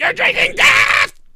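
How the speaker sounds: shrill, high, loud yelling outburst. Acting out a guy on the sidelines: Sam Kinison impression. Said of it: "He's like Sam Kinison".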